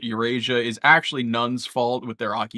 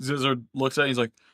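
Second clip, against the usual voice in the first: ordinary talk, nothing marked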